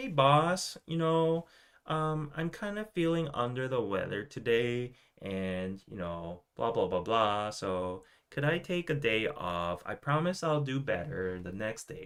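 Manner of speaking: imitated cutesy, high-pitched aegyo voice. Acting out an employee asking the boss for a day off: imitating a cutesy high-pitched voice. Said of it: "in a very cutesy manner with, like, a high pitch".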